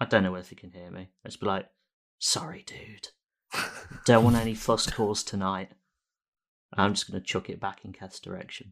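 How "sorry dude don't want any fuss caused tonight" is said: hushed whisper under the breath. After capturing Jeff, a character speaks to the ball, whispering. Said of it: "whisper to the ball".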